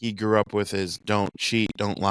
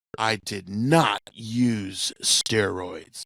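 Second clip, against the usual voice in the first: very slow, deliberate, stretching and stressing "use". Doing an impression of Rafael Palmeiro denying steroid use in court. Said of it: "my impersonation of Rafael Palmeiro".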